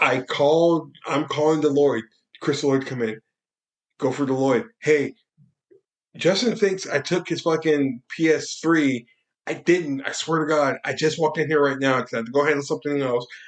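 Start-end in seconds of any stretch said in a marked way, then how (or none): none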